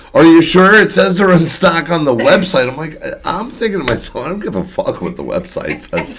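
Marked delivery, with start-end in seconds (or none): 0.1-2.7 high, screaming voice. Retelling how a woman screamed at the speaker about the website, imitating someone screaming. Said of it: "and she's screaming at me".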